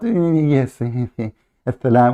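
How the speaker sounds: sneering, mocking put-on voice, drawn out. Mocking a caller on the line: mocking imitation of his changed voice. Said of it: "and you change your voice".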